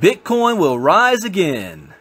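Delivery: put-on Southern American accent, slow drawl. Reading a headline aloud, then remarking on it: Southern accent. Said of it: "Why did I say that like I'm a Southerner?".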